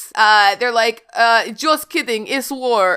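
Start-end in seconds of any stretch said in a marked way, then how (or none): 1.1-3.0 put-on Russian accent with raised pitch. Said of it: "nice accent".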